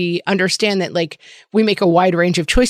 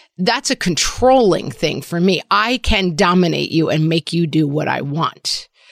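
ordinary talk, nothing marked

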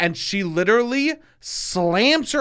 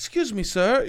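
put-on meek, timid, shy voice, higher; 3 semitones higher than usual. Retelling approaching a bar to order: imitating own meek, shy voice. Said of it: "I'm very meek and shy".

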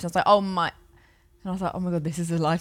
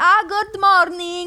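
high, loud put-on Italian accent on English words; 12 semitones higher, 6 dB louder than usual. Retelling answering the man's buongiorno, with an italian accent on english words. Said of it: "I did the accent, but not the words".

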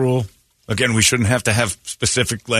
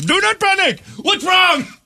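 very high, pitched-up put-on Indian accent; 3 dB louder than usual. Joking about hearing a calm warning in an accent: mock Indian accent. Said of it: "If you had an Indian run".

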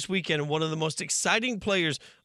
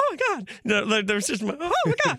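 high squeaky voice, swooping in pitch; 8 semitones higher than usual. Retelling being introduced to a football Hall of Fame finalist, Mickey Mouse voice. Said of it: "I don't know why I went full Mickey Mouse".

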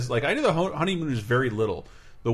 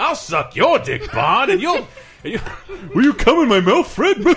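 high, loud, big cartoon caveman voice; 8 semitones higher, 10 dB louder than usual. Improvising a Flintstones scene because of a forum user's name: Barney Rubble impression. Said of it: "Your Barney Rubble impression".

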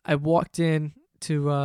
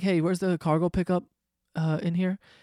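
ordinary talk, nothing marked

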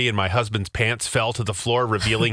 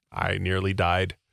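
ordinary talk, nothing marked

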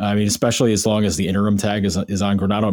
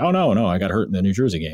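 mock-nonchalant, offhand casual tone. Recounting a player's account of his injury, retelling a nonchalant remark. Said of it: "Jack was pretty nonchalant".

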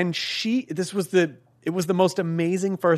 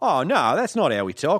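Australian way of talking. Pretending to be an Australian listener objecting: Australian accent. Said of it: "That's pretty good, man".

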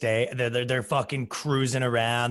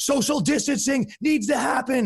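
very high, drawn-out, slow police megaphone announcer voice; 13 semitones higher than usual. Retelling how the cops announced over megaphones: imitating a cop on a megaphone. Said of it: "they have the megaphones, and they go".

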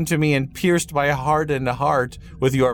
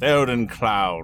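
put-on speaking in an old wizard voice; 4 semitones lower than usual. Host reading out a commenter's name, in Gandalf voice. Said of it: "I'm going to try my Gandalf voice here".

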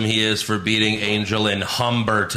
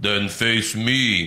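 deep, slow giant's voice. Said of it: "And then Shanky says".

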